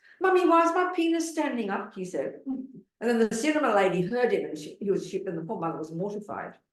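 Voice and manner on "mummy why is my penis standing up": put-on tiny, very high, piping child's voice. Retelling a small boy asking his mother a question, in a piping little boy voice. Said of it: "a little piping little little voice".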